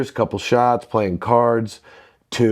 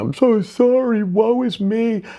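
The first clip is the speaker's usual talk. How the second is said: put-on very high, slow, drawn-out, teary drunken sobbing wail; 12 semitones higher than usual. Retelling a drunken apology made on the back porch: imitating own drunken crying. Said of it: "I was drunk, crying".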